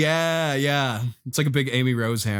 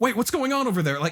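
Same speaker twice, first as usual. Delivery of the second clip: panicked, freaking out, higher; 10 semitones higher than usual. Pitching a trailer scene, voicing characters on the jury side: freaking out. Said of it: "some Nintendo characters freaking out".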